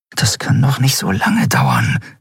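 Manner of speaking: muttered, murmuring aside, half to herself. Reading an impatient character's line while waiting, murmuring. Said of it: "murmelte Endriel".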